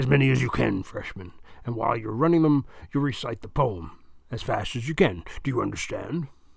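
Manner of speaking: plain reading voice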